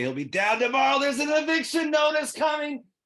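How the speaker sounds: play-acted very high yell, swooping upward in pitch. Retelling an audition line called up to an actor in a tree: re-enacting a yell up a tree. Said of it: "I yelled up the tree and said".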